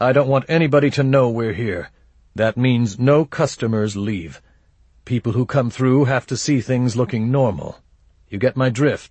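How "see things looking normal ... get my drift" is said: plain reading voice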